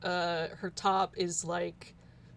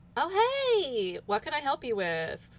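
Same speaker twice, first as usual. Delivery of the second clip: put-on high, swooping Valley Girl accent; 7 semitones higher than usual. The narrator voices someone greeting a character who wants a surfboard, Valley Girl voice. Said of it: "Not shark, but Valley Girl voice".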